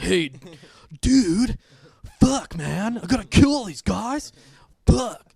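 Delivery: awful shouted put-on drawl, deliberately bad, slow. Discussing an action film, doing a terrible Keanu Reeves impression. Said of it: "that's a terrible impression".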